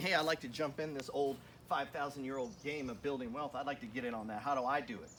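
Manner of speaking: normal talking voice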